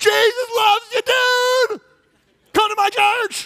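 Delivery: very high, loud, breezy, friendly, drawn out. Imitating drive-by witnessing from a car window: imitating a nice drive-by witnesser. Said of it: "those are the nice ones".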